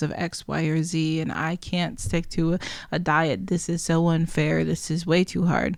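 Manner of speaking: ordinary talk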